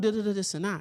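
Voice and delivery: ordinary talk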